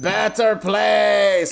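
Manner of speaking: acted rough, creaky ghoul voice, place name drawn out. Retelling how the jack-o'-lantern head monsters in the episode tell the kids: imitating monsters yelling. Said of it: "they're just yelling at them".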